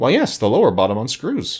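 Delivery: plain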